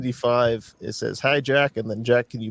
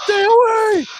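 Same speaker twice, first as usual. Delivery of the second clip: very high, loud, shrill yell; 8 dB louder than usual. Retelling a camel with PTSD yelling at other camels: mock-yelling as a camel. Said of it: "he's yelling".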